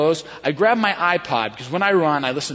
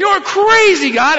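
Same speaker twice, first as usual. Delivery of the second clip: put-on loud shout, higher and louder; 8 dB louder than usual. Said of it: "as loud as I could".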